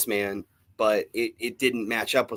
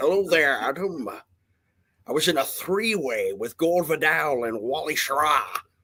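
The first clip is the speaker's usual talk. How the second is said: put-on posh Scottish accent, pitched up; 5 semitones higher than usual. Comparing a character's off-putting accent, doing a Colonel Gentleman voice. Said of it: "sounded like Colonel Gentleman".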